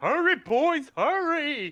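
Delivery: very high, loud, shrill in-character yell. Playing a character who calls to the boys: yelling in character. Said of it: "And then I start yelling".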